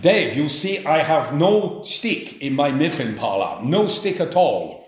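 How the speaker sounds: put-on German-accented male speech. Retelling what Max would say to him, in Max's German accent. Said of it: "he would say to me in a German accent".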